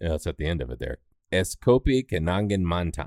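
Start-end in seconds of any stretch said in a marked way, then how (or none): 1.3-3.1 careful, very slow, drawn-out Indonesian accent. Saying the coffee chain's full name to correct the other speaker: Indonesian accent. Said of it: "Did you hear the accent?".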